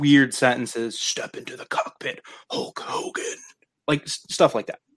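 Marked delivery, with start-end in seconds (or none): 1.0-3.4 snarled, half-whispered, breathy wrestler-style voice. Pitching a casting idea for a voice role: snarling Ultimate Warrior voice. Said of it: "you only talk like the Ultimate Warrior".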